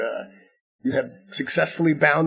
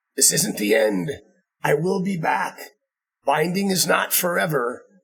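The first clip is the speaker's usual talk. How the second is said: cried out like beaten villain; 4 semitones higher than usual. Narrating the quest, the storyteller voices a villain vanishing into a throne: villain screaming. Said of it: "as he screams".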